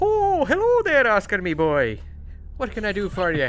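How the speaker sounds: put-on high, lilting leprechaun voice. Voicing a leprechaun answering a phone call: leprechaun voice. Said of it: "why are you calling a leprechaun?".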